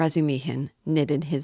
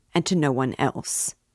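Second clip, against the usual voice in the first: ordinary delivery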